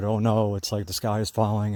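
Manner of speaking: normal talking voice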